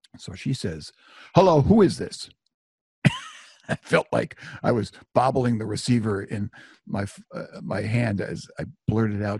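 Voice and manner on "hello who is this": loud, high, mock angry, demanding voice. Retelling a woman answering the phone, imitating her very angry greeting. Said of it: "she also sounded very angry".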